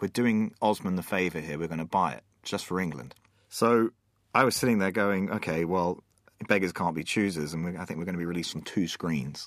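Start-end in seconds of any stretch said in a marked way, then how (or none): none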